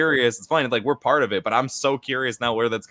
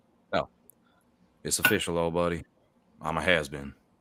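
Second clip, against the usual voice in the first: gentle, sad, soft, low country accent; 6 semitones lower, 6 dB quieter than usual. Showing another person how to deliver the line: soft country accent. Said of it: "in a sort of like soft country accent".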